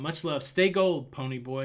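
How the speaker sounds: ordinary delivery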